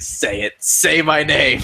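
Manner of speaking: slow, deliberate, every word leaned on. Retelling the show's host demanding an answer: Chris Hansen doing Samuel Jackson. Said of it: "sounded like Chris Hansen trying to do that, like, um, Samuel Jackson thing".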